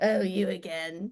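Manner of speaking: put-on cranky, grouchy man voice. Imagining what the guitar would say to its player, in a grumpy man voice. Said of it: "a really grumpy man voice".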